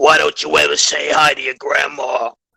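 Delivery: put-on, creaky, elderly grandmother voice. Joking that the sleep-paralysis old woman is a fellow host's grandma: put-on grandma voice. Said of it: "Why does she".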